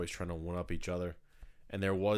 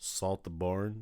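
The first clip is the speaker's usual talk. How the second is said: "saltburn" pronounced "salt the barn". Doing an impression of someone saying Saltburn: Barry Keoghan impression. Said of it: "Barry Cogan saying Saltburn".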